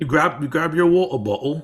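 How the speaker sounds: put-on generic, stock British accent. Telling the other speaker to grab their water bottle, in a generic British accent. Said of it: "doing my best generic British accent right there".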